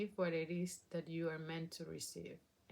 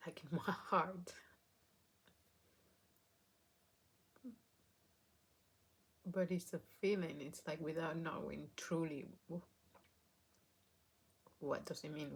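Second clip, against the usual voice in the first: weeping, tearful, crying while speaking. Getting emotional about what an experience taught them, crying while talking. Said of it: "Why am I crying?".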